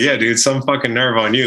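teasing while laughing. Retelling teasing a man just met at the Gator Bowl, retelling laughing ribbing. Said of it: "I wasn't pissed, but I was just laughing".

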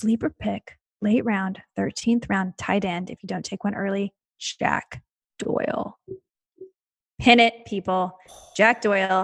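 quiet, hushed voice. Speaker, asked to talk about sleeper picks in a hushed tone, speaking quietly.

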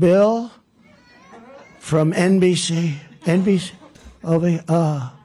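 very slow, dragged-out, drawn-out speech. Imitating a politician calling on a reporter: Joe Biden impression. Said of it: "Here's an impression of Joe Biden".

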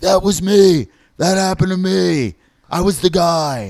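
put-on drunk voice. Retelling a drunk audience member's outburst during a story: imitating a drunk guy. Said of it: "this dude who's drunk by himself was like".

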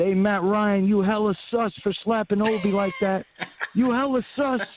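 acted-out, high, taunting heckling call. Retelling screaming at a player during a dead ball: retelling a scream at a player. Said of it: "I got up and I screamed out".

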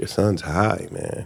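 breathy, hushed whisper under the breath. Retelling what the doctor told the dad: imitating a whisper. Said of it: "the doctor just whispered to my dad".

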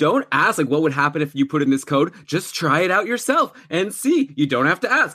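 bossy, lecturing, advice-giving tone. Quoting a boss at work who keeps giving advice: imitating a boss. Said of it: "He's always giving advice, like, you know".

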